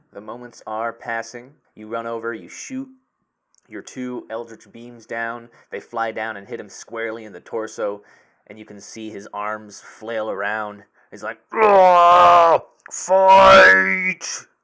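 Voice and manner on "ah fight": shrill, booming furious roar, high, drawn-out ah. Game master voicing a foe hit by eldritch beams: angry bellowing. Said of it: "Very angrily in a bellowing voice".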